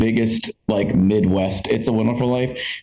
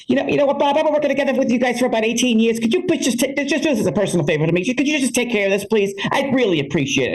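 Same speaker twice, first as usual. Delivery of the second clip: put-on very high, tough woman's voice with Chicago accent; 13 semitones higher than usual. Retelling a Zoom call, quoting a hard-ass Italian South Side Chicago woman: South Side Chicago accent. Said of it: "this hard-ass Italian South Side Chicago woman".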